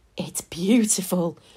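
hushed, whispered voice. Eric looks into the cupboard of sweets Charlie has just opened, whispering. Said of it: "whispered Eric".

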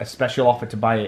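ordinary delivery

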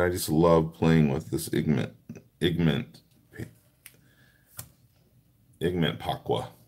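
garbled, tongue-tied, stumbling and tripping over words. Talking about playing with aqua pigments, tongue-tied, stumbling over words. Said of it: "I can't even talk straight".

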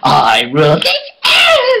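put-on ranting, voice breaking and cracking up high, childlike. Retelling his rant on a pirate ship, a speaker imitates him: a yell with his voice cracking. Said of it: "his voice broke and he sounded like a wee child".

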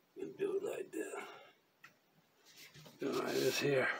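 quiet under-breath voice. Narrating their own steps aloud to viewers; under my breath. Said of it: "Really under my breath for some reason today".

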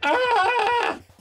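screaming, yelling in pain. Voicing a man who breaks free, still screaming: screaming. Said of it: "He's still screaming".

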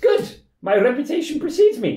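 very high-pitched, loud voice. In a role-play, the healer character Robert answers the party, Robert the healer voice. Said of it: "I am known in these parts as a healer".

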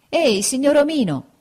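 high, loud hailing shout. Pinocchio calls out to the owner of the cart, shouting. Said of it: "gridò allora Pinocchio".

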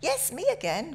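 bright and cheery. Vince greets the woman behind the chip shop counter, bright.

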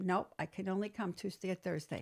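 ordinary talk

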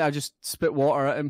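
usual speaking voice

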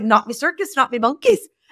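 imitated Northern Irish accent. Speaker quotes a gentleman's expression from a Northern Ireland roundtable, Northern Irish accent. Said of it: "you have to say it with that accent".

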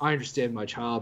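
quiet, calm, fake villain voice. Retelling a movie scene where Thanos pats her on the head: mock-calm Thanos voice. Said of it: "Thanos is like calm".

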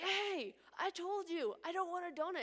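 angry drawn-out protest tone. Retelling how a student protested to the teacher: imitating an angry student. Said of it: "the guy gets really mad".

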